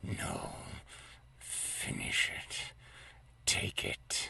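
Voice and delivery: slow, drawn-out, hushed whisper, very close. A game narrator voices a voice whispering in a player's ear: whispered voice. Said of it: "you hear a whispered voice in your ear".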